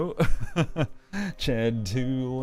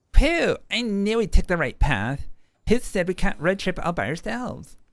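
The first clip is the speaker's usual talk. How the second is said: put-on high, loud Valley Girl voice, made higher; 8 semitones higher, 5 dB louder than usual. Reading a Monster Prom scene aloud, voicing a woman character in Valley Girl voice. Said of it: "the same Valley Girl voice".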